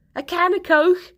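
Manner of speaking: put-on very high Scouse accent. Retelling a teammate asking for a snack: imitating Trot's Liverpudlian accent. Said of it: "said it in a Liverpudlian accent".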